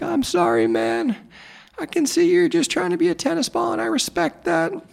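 put-on, very high, blubbering crying through tears. Acting out the guy's reply in a story you're retelling, imitating a man crying. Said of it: "the guy starts crying and he's like".

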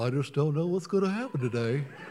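gloomy put-on cartoon character voice. Asking if you want to be around an Eeyore, speaker acts one out: Eeyore voice. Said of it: "an Eeyore".

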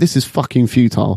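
normal talking voice

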